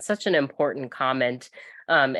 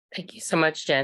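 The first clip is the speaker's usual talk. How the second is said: raspy, croaking, hoarse frog-like voice; 2 semitones higher than usual. Thanking a participant for raising a point, in a hoarse frog voice. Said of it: "Sorry for my frog voice".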